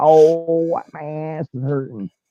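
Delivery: slow, drawn-out Italian-flavored comedy character voice. Showing how the Sal Rosenberg voice sounds in Mort. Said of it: "you can hear some of the, uh, the Sal Rosenberg".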